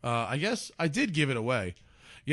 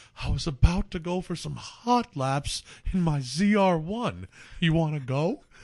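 put-on slurred man's speech, pitched higher; 3 semitones higher than usual. Speaker retells meeting Bob at the track, imitating Bob's stroke-like slur. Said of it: "he talks like he's just had a stroke".

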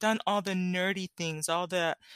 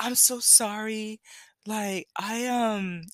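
very slow, laid-on, put-on apologetic voice; 3 semitones higher than usual. Retelling apologizing to a supervisor for forgetting something: imitating own put-on apologetic voice. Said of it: "and the voice and everything".

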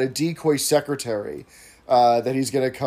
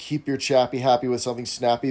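usual speaking voice

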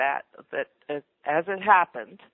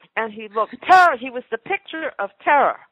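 usual speaking voice

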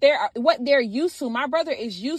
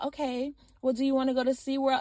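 put-on voice of a two-year-old boy; 7 dB quieter than usual. Describing a two-year-old boy answering her brother's attitude, imitating Josiah's tone. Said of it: "literally in this tone".

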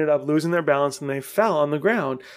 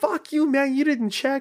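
mock shrill, very high shouting; 11 semitones higher than usual. Retelling a run-in with an old man over a bike, reenacting yelling at him. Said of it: "like yelling at this old dude".

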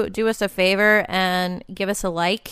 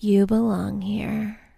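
creaky, sultry, seductive sexy voice. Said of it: "And her voice was so sexy".

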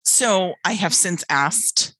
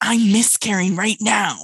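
high-pitched whisper-scream, half whisper, half scream; 4 semitones higher than usual. Speaker recalls what she said to the woman with her; retelling a whisper-scream. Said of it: "whisper screaming".

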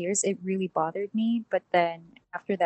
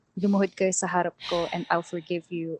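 normal talking voice

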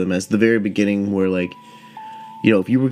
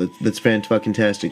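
plain

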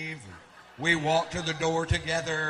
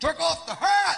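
mock very high, shrill, pissy, angry raised voice; 12 semitones higher, 7 dB louder than usual. Retelling a bouncer's order to remove a hat: imitating an angry bouncer. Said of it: "This guy real pissy goes".

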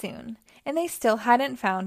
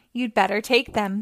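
plain

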